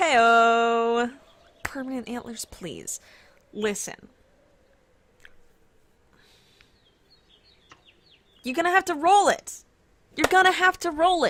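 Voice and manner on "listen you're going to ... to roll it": high, raised yelling voice. Answering a viewer's request for permanent antlers: yelling at the audience. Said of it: "I'm yelling at the audience".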